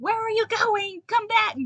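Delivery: very high, loud, shrill creature screech. In a tabletop game, the narrator voices a beetle screaming at those leaving it. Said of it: "just kind of screams at them".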